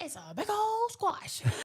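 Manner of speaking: put-on high, slow proud little boy voice.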